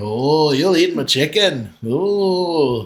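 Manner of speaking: put-on comic Scottish accent with drawn-out "oh". Quoting a movie to a listener, the speaker does a Mike Myers impression. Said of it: "You do a really good Mike Myers impersonation".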